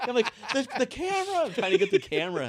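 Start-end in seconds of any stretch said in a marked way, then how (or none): 0.5-1.5 acted very high scream, straining over noise. Retelling how a camera slid toward an open door, the speaker reenacts screaming at the pilot. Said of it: "I'm screaming at the pilot".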